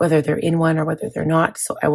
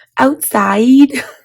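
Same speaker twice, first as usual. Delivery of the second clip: put-on loud, shrill, tiny little baby voice; 8 semitones higher, 10 dB louder than usual. Retelling how the son asks to go out: imitating son's little baby voice. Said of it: "it's so cute in his little baby voice".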